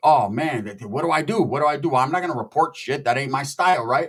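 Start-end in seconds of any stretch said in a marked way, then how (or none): 0.0-2.0 put-on panicked voice. Retelling his reaction to the livestream: retelling his own panic. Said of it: "So I'm tripping like".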